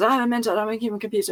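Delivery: put-on drugged-sounding rapid speech. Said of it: "talking faster and faster and faster".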